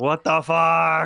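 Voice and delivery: slow, loud, drawn-out startled outburst. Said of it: "I went".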